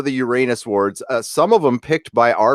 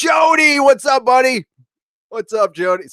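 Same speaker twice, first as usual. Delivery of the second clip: very high-pitched excited shout; 13 semitones higher, 3 dB louder than usual. Reading out subscriber names and greeting jody, with excited yelling. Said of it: "I didn't mean to yell in the microphone".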